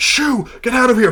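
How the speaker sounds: screaming character voice. Describing Benedict driving something off with a warning shot, Benedict yelling and screaming. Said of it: "starts yelling and screaming like".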